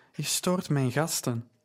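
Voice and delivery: ordinary talk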